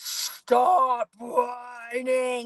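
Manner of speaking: extremely demonic, possessed voice, right up close. Parent recounts getting in her son's face in the back seat, demonic voice. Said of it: "in the most demonic voice ever".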